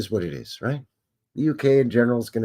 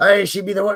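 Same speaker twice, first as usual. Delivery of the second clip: bad put-on Scottish pirate accent, pitched up; 10 semitones higher, 4 dB louder than usual. Answering which castle is theirs, bad Scottish pirate accent. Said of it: "that's a pirate. A Scottish accent".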